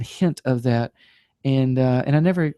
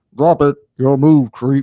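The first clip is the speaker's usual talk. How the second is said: louder mechanical put-on voice; 7 dB louder than usual. Recalling his high-school act, showing his RoboCop impersonation. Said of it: "I did like a RoboCop impersonation".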